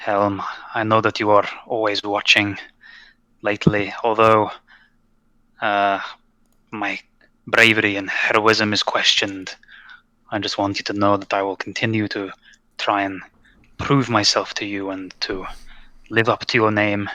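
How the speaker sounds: mumbling under breath. A player's character kneels and prays to his god: mumbling under his breath. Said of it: "mumbling under his breath".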